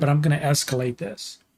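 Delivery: plain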